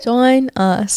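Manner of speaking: put-on English accent. Closing the podcast, joking around: put-on English accent. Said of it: "if I actually had this accent".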